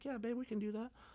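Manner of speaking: put-on sugary sweet voice, high and soft. Retelling answering his partner on a phone call, in a put-on sweet voice. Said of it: "put on my sweet voice".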